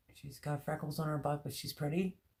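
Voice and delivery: rapid-fire delivery, words running together. Saying a short phrase as fast as possible: said quickly, words running together. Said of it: "you have to say it fast ... Was that fast enough?".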